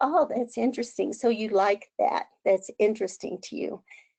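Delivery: normal talking voice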